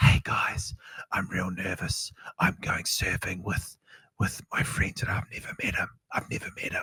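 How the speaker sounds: soft, breathy whisper under the breath throughout. Mocking Gen Z kids in cringe surf edits: whispered. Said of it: "What they're like whispering, like".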